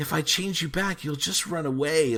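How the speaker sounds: super creepy, high-pitched voice. Speaker retelling how Sabrina answers doll-form Misty's challenge, put-on super creepy Sabrina voice. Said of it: "like in a super creepy voice".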